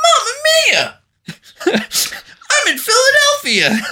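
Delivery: very high, slow, stretched-out, swooping sing-song. Imitating a movie line, Charlie Day impression. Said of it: "Charlie Day was just like".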